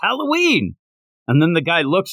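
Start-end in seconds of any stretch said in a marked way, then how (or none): 0.0-0.7 very high-pitched, blurted-out shouted exclamation. Retelling a scene where a character comes up: imitating a character shouting. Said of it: "comes up and goes".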